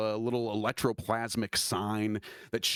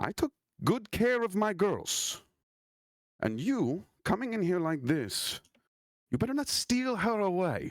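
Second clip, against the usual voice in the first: put-on high-pitched French accent; 9 semitones higher than usual. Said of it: "She has a French accent".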